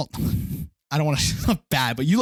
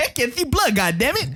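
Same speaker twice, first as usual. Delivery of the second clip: put-on lisping voice, higher; 10 semitones higher than usual. Repeating Samuel L. Jackson's Kingsman line: Samuel L. Jackson lisp impression. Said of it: "he was a great character".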